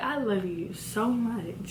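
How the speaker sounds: very soft, slow, hushed swooning voice.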